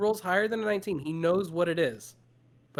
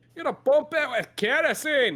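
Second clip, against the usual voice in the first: put-on, very high-pitched Scottish accent; 9 semitones higher, 4 dB louder than usual. Voicing a character who suggests pumping kerosene: Scottish accent. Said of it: "doing a Scottish accent".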